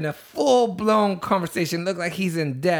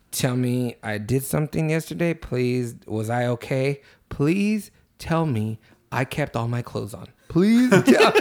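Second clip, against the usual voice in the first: acted dead-serious, much lower, slower; 6 semitones lower than usual. Retelling a man begging to hear what he did last night, retelling a dead-serious plea. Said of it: "he's fucking being dead serious".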